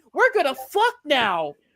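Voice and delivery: giddy, happy voice. Mocking how a character acts in the show: mock happy and giddy Ellie voice. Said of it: "she's all happy and giddy".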